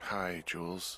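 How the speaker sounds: tired, weary-sounding voice. Woken to answer the radio, [name] greets Jules in a tired voice. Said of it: "you sound tired".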